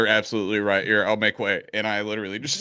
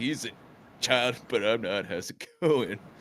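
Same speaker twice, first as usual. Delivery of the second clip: flirtatious, flirty in-character tone; 4 dB quieter than usual. Making eyes at a woman while in character, flirty in-character line. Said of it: "I'm just like".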